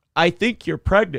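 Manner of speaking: mid-yawn. Talking on a morning show, yawning. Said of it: "Excuse me, I'm yawning".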